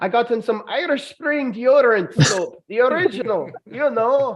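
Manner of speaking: put-on stage-Irish leprechaun accent. Listing gifts bought for someone: put-on irish leprechaun accent. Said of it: "Insert your best Irish leprechaun accent".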